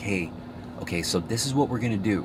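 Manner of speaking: tone dropped low and hushed. Showing how to give instructions so people listen, with a lowered voice. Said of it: "you would lower it down like".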